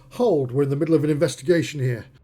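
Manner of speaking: firm, authoritative, commanding voice. In a role-play scene, calling everyone to stop, commanding voice. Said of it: "in a commanding voice".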